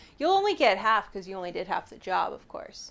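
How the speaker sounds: dead straight, deadpan delivery. Telling another character they get half pay: completely deadpan. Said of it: "I say completely, like, deadpan".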